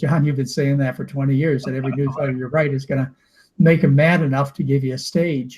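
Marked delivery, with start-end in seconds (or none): none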